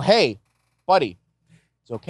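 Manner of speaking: ordinary delivery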